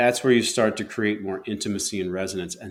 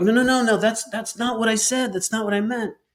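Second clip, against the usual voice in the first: very high, reactive, defensive, protesting tone; 12 semitones higher, 3 dB louder than usual. Showing how a defensive partner answers an upset partner: reactive defensive voice, pitch raised. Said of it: "my voice just went up a half an octave".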